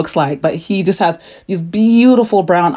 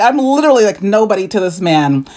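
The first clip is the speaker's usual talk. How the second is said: normal talking voice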